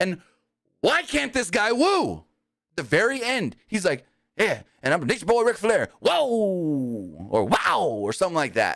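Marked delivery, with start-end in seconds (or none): 4.4-7.3 weak, limp yell, whoa drawn out long. Mocking the actor cast as Ric Flair: mocking a weak Ric Flair woo. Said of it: "This guy was more like a whoa".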